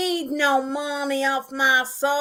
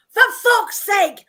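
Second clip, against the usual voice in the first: mock, loud, high-pitched raging outburst with swearing; 7 semitones higher, 5 dB louder than usual. Describing a woman's road rage, acting out what she shouts while driving: mock road-rage outburst. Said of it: "a very big road rage problem".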